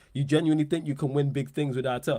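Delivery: ordinary delivery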